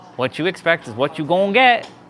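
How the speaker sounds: practised, rehearsed Southern US accent. Repeating his line to the other speaker, in a Southern American accent. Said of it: "I've been practicing that Southern American accent".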